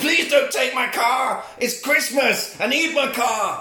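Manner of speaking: high-pitched, pleading, begging yell. Retelling what a man said to the cop towing his car: retelling a scream. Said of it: "And he screams at the cop".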